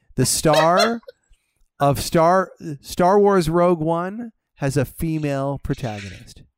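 very slow, deliberate, drawn-out, word by word. Announcing news to the other speaker and their fans: said very, very slowly. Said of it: "I will say it very, very slowly".

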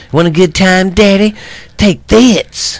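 very high, crude, vulgar woman's voice. Acting out a ghost woman talking vulgar to guys: imitating a vulgar ghost woman. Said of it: "the women talk vulgar".

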